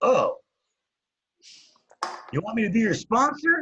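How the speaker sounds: high, smug, arrogant mock sponsor voice, sneering.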